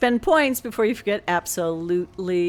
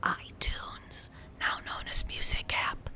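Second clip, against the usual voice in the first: hushed whisper under the breath. A streamer explains why the music is off, whispering so the app won't wake. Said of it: "I'm whispering because I don't want to wake it up".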